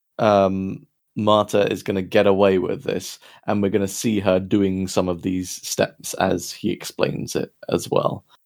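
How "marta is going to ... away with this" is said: usual speaking voice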